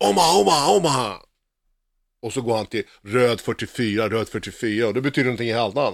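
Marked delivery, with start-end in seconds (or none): 0.1-1.2 play-acted quarterback shouting, pitched up. Retelling what Peyton Manning shouts before the snap: imitating Peyton Manning shouting. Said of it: "och sen så skriker han".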